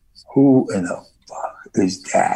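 slow whisper under the breath. Retelling asking who the girl in the stopped video was: imitating his own whisper. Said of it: "I'm whispering to you".

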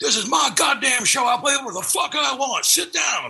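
craggly sing-song voice, pitched very high. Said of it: "particularly craggly".

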